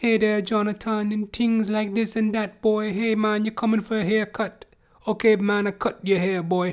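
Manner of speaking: put-on Trinidadian accent. Describing an elderly Trinidadian man he knew, doing an elderly Trinidadian man impression. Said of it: "He's like this elderly Trinidadian dude".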